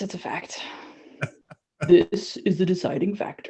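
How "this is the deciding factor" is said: dropped down deep and soft. Asked to try the deep voice, speaker does a Sean Connery deep voice. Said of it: "I do have a very good deep voice".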